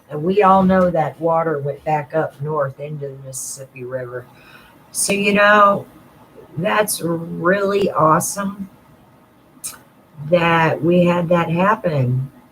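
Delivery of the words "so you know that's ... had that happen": heavy, slow, sarcastic drawl. Commenting on flood water going back north into the river: sarcastic. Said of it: "I am being sarcastic".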